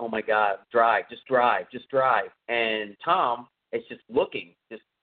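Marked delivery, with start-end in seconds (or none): none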